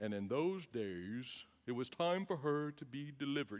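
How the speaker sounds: low, hushed, somber, sleep-inducing reading voice. Discussing the Christmas story, the speaker demonstrates the somber, sleepy Bible-reading voice. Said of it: "the voice that puts you to sleep".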